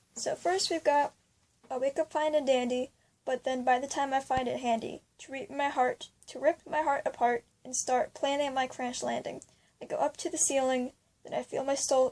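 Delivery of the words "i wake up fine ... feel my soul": ordinary talk, nothing marked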